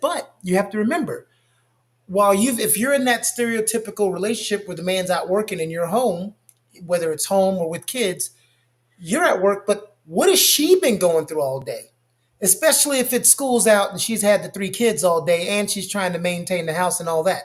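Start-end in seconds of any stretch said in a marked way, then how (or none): none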